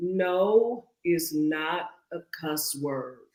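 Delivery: very slow, deliberate delivery, no drawn out. Repeating a line after being asked to say it again: said slowly. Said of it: "Let me just say it a little slow".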